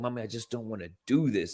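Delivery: put-on girl voice, breaking down crying. Retelling a pageant girl's plea to her mother: imitating a girl breaking down. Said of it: "I watched that little girl break down".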